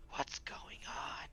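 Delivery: sneaky, soft, hushed whisper close to the ear. An invisible character sneaks up beside another character and whispers in his ear. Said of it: "and whisper".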